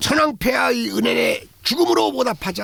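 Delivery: mock choked-up, high, tearful, on the verge of crying. Retelling a wartime lecture urging death for the emperor: imitating a tearful speech. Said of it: "하고 막 울먹입니다".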